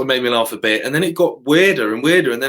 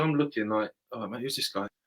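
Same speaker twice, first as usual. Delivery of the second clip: ordinary delivery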